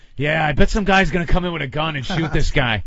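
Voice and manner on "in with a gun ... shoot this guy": normal talking voice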